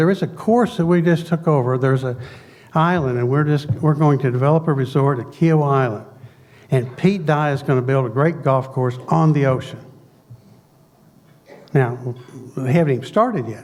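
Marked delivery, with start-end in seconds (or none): none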